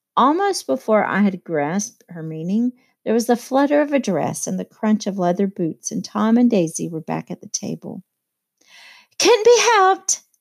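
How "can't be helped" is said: strained tense cheerfulness, bright and pitched very high. A woman returning to the dinner table speaks, with tense gaiety. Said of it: "cried Daisy with tense gaiety".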